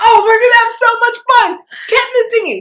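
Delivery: mock whooping, gleeful holler, very high and loud. Retelling how Q in the dinghy cheered: imitating Q hooting and hollering. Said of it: "hooping and hollering".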